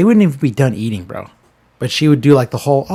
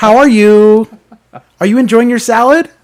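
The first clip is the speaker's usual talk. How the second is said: loud, shrill, very high put-on waiter voice; 10 semitones higher, 8 dB louder than usual. After the other speaker says he dislikes it, demonstrating the server voice. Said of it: "I'm not a big fan of the server voice".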